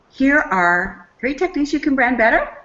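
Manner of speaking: question-like uptalk rising on better. Demonstrating a statement said with the voice going up, rising like a question. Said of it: "the voice goes up, it's as if you're asking a question".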